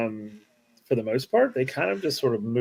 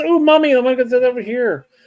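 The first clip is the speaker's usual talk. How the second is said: put-on high, loud little kid voice, calling out; 12 semitones higher, 10 dB louder than usual. Voicing a child who asks her mother to go somewhere: child's voice. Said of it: "you're just like a child. She goes".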